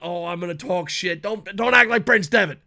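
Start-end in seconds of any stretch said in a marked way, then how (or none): 0.0-1.2 brash, cocky, boastful, swaggering tone.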